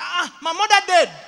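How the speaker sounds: full-on, very loud shouting. Retelling what one of the guys said in their conversation, retelling a shout. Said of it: "you're shouting".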